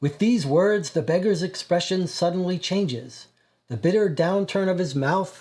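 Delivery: ordinary delivery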